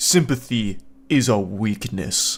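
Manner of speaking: slow, low anime character voice, very drawn out. Retelling one guy's interview line, speaking like an anime character. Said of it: "he's speaking like an anime character".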